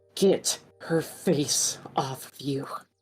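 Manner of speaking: low, growled-out, growling delivery. A player speaks as their character slashing with a rapier, growling. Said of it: "she just growls out".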